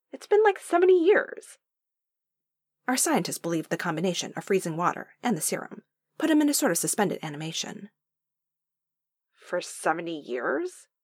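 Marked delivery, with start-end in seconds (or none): 9.3-10.8 doubtful, incredulous, deeply skeptical tone. A woman hears that someone survived frozen for seventy years, deeply skeptical. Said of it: "She sounded deeply skeptical".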